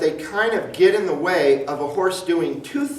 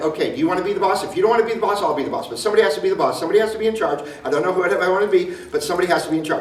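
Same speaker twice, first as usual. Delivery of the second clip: rapid, infantile rattle like a talking horse. A speaker voices what a horse would say if it could talk, fast and childlike. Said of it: "they would talk really fast".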